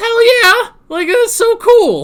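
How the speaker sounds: very high voice, cracking with excitement. Reacting excitedly to a hero's powers, voice cracking with excitement. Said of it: "my voice cracked there".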